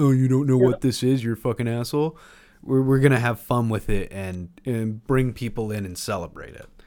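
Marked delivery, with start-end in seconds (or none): 0.0-2.2 loud, blurted, nerdy, snobbish tone. Describing what their podcast avoids, in a Comic Book Guy voice. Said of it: "comic book guy from The Simpsons".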